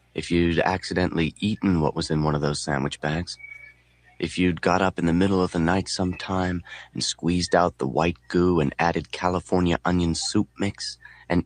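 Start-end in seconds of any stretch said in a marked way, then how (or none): none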